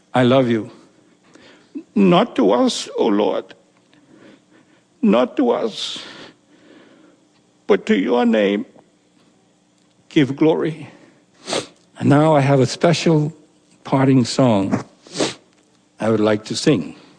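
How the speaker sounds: crying while speaking, tearful voice. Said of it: "because I'm crying so much".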